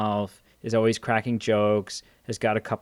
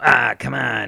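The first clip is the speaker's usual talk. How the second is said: loud, raspy character voice pushed out; 6 dB louder than usual. Retelling how a movie character talks: Beetlejuice character voice. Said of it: "character voice".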